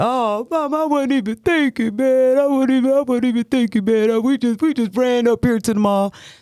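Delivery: acted laughing through words, very high pitch. A mother retells her son calling back after her urgent text, imitating Oziah laughing. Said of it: "And he's laughing".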